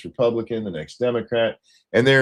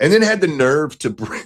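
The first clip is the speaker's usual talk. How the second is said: ordinary delivery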